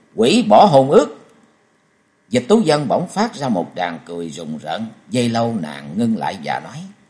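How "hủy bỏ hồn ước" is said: loud, spat out one word at a time. A man answers a stunned woman's question, biting off each word. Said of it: "Châu Thanh gằn từng tiếng".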